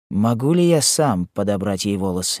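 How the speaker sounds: ordinary delivery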